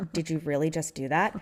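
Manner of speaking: very calm, dead-serious voice. Retelling what was said after being hit hard: retelling in a very calm voice. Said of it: "I said dead seriously in, like, a very calm voice".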